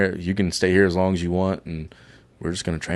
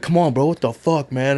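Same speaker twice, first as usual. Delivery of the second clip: play-acted, high, angry, pissed-off yelling; 7 semitones higher than usual. Retelling a friend's reaction to being downed: imitating someone yelling angrily. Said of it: "yelling at me".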